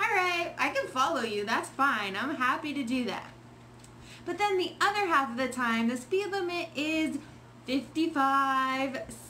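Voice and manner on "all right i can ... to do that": usual speaking voice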